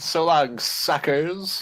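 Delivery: put-on childish, jeering voice like a three-year-old. Retelling a movie character's parting line: childish, like a three-year-old. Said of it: "He's like a three-year-old".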